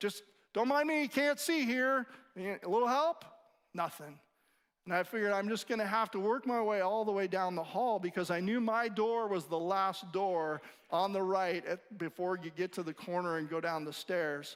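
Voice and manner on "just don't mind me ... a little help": mock dry, exasperated, frustrated sarcasm, pitched up. Calling down a hall for help, retelling own sarcastic frustration. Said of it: "getting kind of sarcastic in the moment because I was frustrated".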